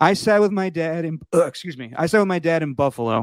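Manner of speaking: voice on the edge of tears. Speaker recalling a moment, sounding about to cry. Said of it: "It sounded like you were about to cry there".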